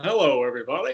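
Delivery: smile heard in the voice. Opening a weekly update with a guest: smiling voice. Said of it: "I gotta get that smiling voice thing going".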